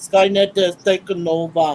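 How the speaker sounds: very low, deep, slow delivery. Showing how the line should be said: Arnold Schwarzenegger impression. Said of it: "Gotta say it like Arnold".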